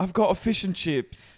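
very high, slow, put-on British accent. Joking about British people on reality shows: imitating a British accent. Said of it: "all of the British people on the Bravo shows I watch".

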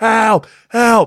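put-on young-sounding voice, high, urgent yelling. Telling a story about a player on the field, act it out, imitating Mark Nicoski screaming for help. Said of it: "out screaming for help".

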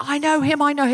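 repeated, insistent screaming. Retelling how a composer at a nightclub door was screaming: imitating someone screaming. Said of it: "he was screaming".

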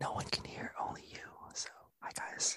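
mock ASMR whisper. A guest jokingly whispering into the microphone, mock ASMR whisper. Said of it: "This is scientifically ASMR".

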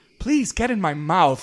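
sweet, kind monster voice, high and loud. Giving examples of grotesque horrors said in a kind voice. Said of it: "grotesque horrors said in kind voices".

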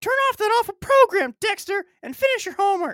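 very high-pitched, loud put-on voice. Reading a story aloud with a different voice for each character; mom character voice. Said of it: "that's the mom".

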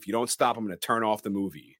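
ordinary talk

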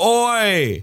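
put-on loud, shouted Australian accent. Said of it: "let me do an Australian".

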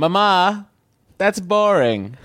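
put-on British accent. Voicing a caller's son talking to his mother: british accent. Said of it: "now he speaks with a British accent?".

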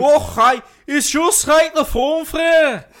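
put-on timid Scottish accent. Performing a scripted line while co-hosts judge the accent: meek Scottish accent. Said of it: "the meekest Scottish accent I've ever heard".

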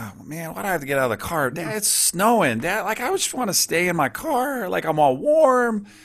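put-on very high, swooping, whiny child voice. Acting out a child begging to stay in the warm car: imitating a kid complaining. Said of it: "kicking and screaming".

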